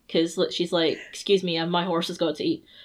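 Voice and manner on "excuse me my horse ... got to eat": normal talking voice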